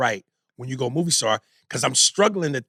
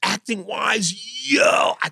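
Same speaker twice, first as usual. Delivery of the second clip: amazed-sounding voice. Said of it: "where I go".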